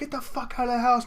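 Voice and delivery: high-pitched scream at the top of the lungs.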